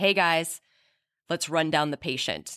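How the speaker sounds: ordinary talk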